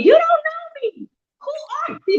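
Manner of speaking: put-on, very high, shrill screaming outburst. Retelling a confrontation where a woman's hand was in her face: retelling a scream. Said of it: "I just started screaming".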